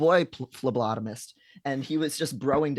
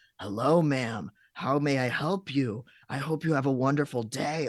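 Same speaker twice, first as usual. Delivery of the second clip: mock-fawning, servile polite clerk voice. Recalling a CVS clerk who was rude to others, imitating an obsequious clerk. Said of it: "she would be incredibly obsequious to me".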